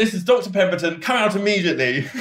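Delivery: mock very prim and proper, high-pitched voice. Retelling walking through and calling out the ghosts, retelling a prim, proper voice. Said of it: "very sort of like prim and proper".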